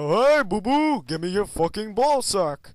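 crude, dark, foul-mouthed mock cartoon bear voice. Friends taking turns doing voices, one says he can do Yogi, Yogi Bear impression.

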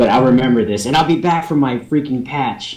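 normal talking voice

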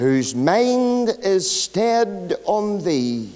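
slow, careful, deliberate reading voice.

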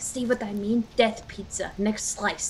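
whispered speech.

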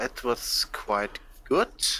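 slow, heavy German accent.

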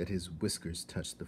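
ordinary delivery

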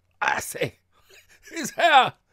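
very loud, very high, very slow laughing yell. A woman points at Georgie's shoulder and speaks in a yell of laughter. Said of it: "she went off into another yell of laughter".

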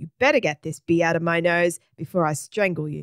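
plain

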